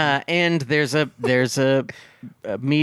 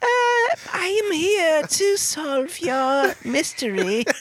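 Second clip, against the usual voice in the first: put-on childlike voice, higher pitch. Acting out the grown-up kid as detective, talking like a little child. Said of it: "he still talks like a little child".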